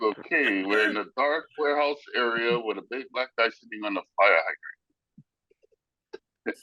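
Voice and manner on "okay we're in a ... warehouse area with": ordinary delivery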